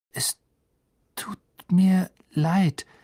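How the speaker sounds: trembling, shaky voice. Narrator reading a character apologizing to a wizard at his desk, trembling voice. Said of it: "sagte er zitternd".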